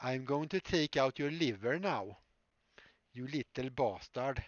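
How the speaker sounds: put-on loud, thick, overdone Swedish accent. Trying out a bad-guy line, the speaker does an overdone Swedish accent. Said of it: "Maybe I should do it in like a Swedish accent".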